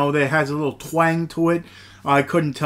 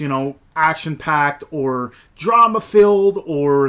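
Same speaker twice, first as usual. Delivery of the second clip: usual speaking voice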